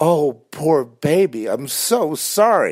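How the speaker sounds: slow, high, drawn-out sarcastic mock sympathy. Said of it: "And then the sarcasm".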